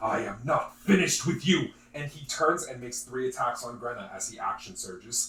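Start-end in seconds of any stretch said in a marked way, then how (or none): 0.0-1.7 loud villain-style shout. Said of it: "He then shouts".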